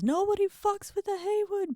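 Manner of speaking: defiant shouting. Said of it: "And she yells".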